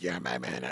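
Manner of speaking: imitated ruined, raspy voice. Retelling a story, imitating a lady's badly damaged voice. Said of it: "that's how her voice was".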